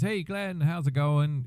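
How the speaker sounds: put-on easygoing Canadian English accent. Retelling Pete phoning him up: imitating Pete's English Canadian accent. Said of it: "in his English Canadian accent".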